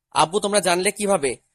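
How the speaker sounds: usual speaking voice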